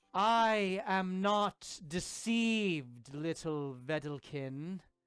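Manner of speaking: magically enhanced, ringing voice. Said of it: "a voice, as if thaumaturgically enhanced, rings out".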